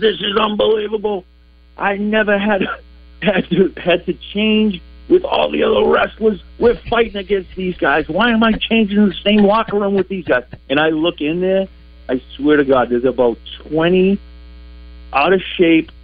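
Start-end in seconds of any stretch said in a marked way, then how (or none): 0.0-10.5 play-acted furious, angry, high-pitched yelling rant. Retelling a wrestler yelling in the locker room: retelling an angry yell. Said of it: "he's screaming and yelling. He goes".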